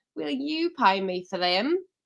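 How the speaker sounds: put-on Cockney slipping into northern accent. Acting a character demanding payment from someone, with the accent slipping toward northern at the end, Cockney drifting northern. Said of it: "That's back to Cockney".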